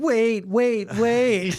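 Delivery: high, frantic, entitled pleading tone.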